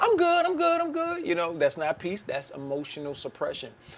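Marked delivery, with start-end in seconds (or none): 0.0-1.3 very high-pitched, fake, put-on cheerful voice. Speaker describing people who pretend everything is okay, imitating their fake voice. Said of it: "they give you the fake voice".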